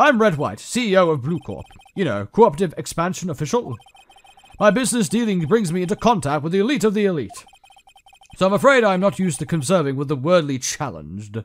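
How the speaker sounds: loud, put-on, acted British accent throughout. Voicing a game character's dialogue aloud: British accent. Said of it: "I'm doing a British accent".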